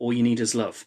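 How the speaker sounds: ordinary delivery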